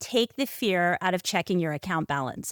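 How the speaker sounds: normal talking voice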